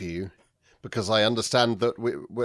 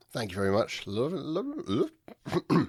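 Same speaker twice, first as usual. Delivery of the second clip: garbled, muffled mumble, as if mouth full; 4 semitones higher, 4 dB quieter than usual. Welcomed back by the host Jeff, the guest thanks him with a mouthful of tea. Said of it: "I had half a mouthful of tea".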